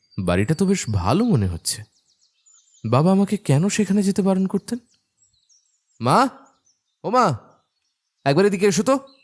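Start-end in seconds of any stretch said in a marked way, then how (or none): 6.0-9.0 loud shouting. Calling to the mother from another room, shouting for mother. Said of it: "এত চিল্লাচ্ছিস কেন?".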